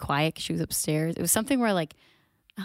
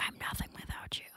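whispered very quietly and close. Retelling what gets whispered into a dog's ear: imitating own whisper. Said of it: "whisper in her ear and I'll be like".

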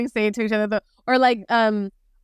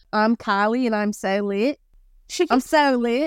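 put-on Australian accent throughout. Speaker imitates an Australian friend to get into the Australian accent. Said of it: "how I could get into the Australian accent".

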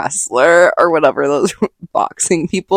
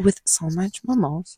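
whispered, much quieter; 11 dB quieter than usual. Planning a Galentine's brunch with the other speaker; whispering. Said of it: "You don't need to whisper that".

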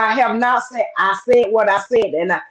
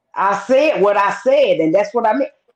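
ordinary talk

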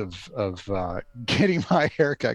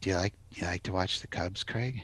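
put-on creepy whisper, much quieter, lower; 3 semitones lower, 9 dB quieter than usual. Retelling what a man would whisper to the speaker, imitating a creepy whisper. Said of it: "like in a creepy voice like".

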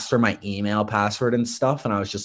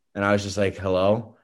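ordinary delivery

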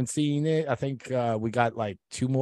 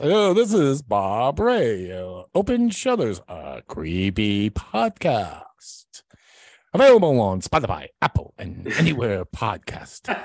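put-on swooping radio announcer voice; 2 semitones lower, 3 dB louder than usual. On air, the speaker makes fun of Barry Marino's radio voice. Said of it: "we can make fun of his radio voice".

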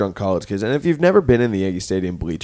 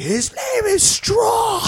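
acted, high-pitched, slow, stretched-out shout. Retelling correcting the fans in the bleachers: imitating own past shout. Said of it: "were shouting".

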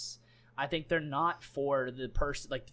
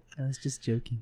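put-on meek, mock-meek tone; 2 semitones lower than usual. Speaker retells his answer after being called princess, imitating a meek reply. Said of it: "he so meekly went".

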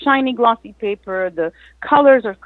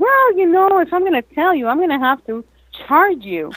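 joking, kidding tone, much higher pitch; 6 semitones higher than usual. Retelling what they told people who asked how they got paid, retelling a joking remark. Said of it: "And jokingly".

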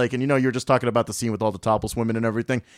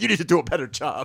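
higher, put-on argumentative voice; 5 semitones higher than usual. Retelling a movie scene where he argues with the Crypt Keeper: imitating John Larroquette arguing. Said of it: "him arguing with".

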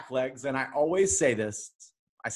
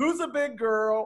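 mock high-pitched holler, loud enough to carry; 8 semitones higher than usual. Retelling lifting her by the back legs into the truck, retelling a yell. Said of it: "And I yell".

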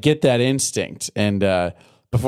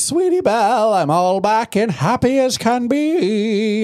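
very high, slow, drawn-out "be"; 10 semitones higher than usual. Recapping an episode where Rarity comes home to Sweetie Belle, Rarity voice. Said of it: "And that's how she sounds".

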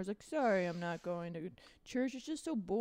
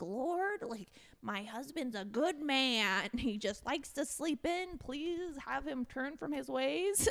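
high, earnest voice; 6 semitones higher than usual. Retelling a cartoon scene, praying on knees: imitating Marge praying. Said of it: "and she's like".

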